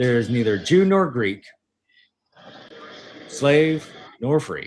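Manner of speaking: usual speaking voice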